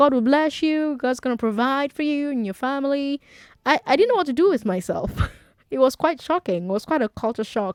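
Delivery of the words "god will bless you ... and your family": put-on plain and earnest American accent. Retelling someone kneeling and begging on a New York subway train, in an American accent. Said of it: "in an American accent".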